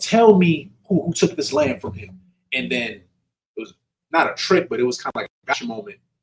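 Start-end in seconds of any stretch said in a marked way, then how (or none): 0.0-2.2 worked-up, outraged, high-pitched tone. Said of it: "real riled up about it".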